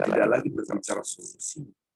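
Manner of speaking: normal talking voice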